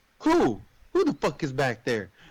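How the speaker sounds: mock aggressive, hostile, pissed-off, swooping angry tone. Retelling a scene, imitating the husband's demand: imitating an angry man. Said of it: "he's already, like, pissed".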